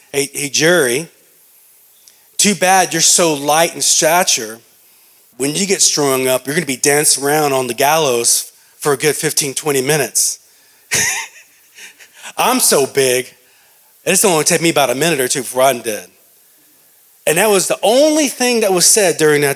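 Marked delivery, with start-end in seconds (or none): none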